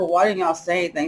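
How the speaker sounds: ordinary talk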